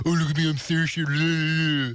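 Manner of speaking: very slow, mocking jeer with one word drawn out. Imitating the other speaker to show mimicking: imitating Saoirse, lower-pitched. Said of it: "So it'd be kind of lower pitched".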